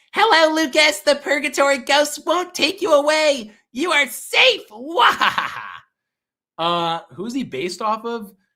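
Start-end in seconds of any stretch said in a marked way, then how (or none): 0.2-5.6 loud, high-pitched character voice. Asked to do an impression and greet Lucas, Test Tube character voice. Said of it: "Can you do your test tube impression".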